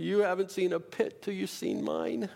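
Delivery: put-on self-pitying lamenting voice. Listing how different people would react to a pit, the speaker does a mock self-pitying person voice. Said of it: "Had to do the voice".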